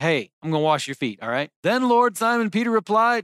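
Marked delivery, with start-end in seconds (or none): 0.0-1.5 put-on stern, serious, no-nonsense tone. Retelling Jesus offering to wash feet: imitating Jesus sounding stern. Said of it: "Jesus is getting stern here".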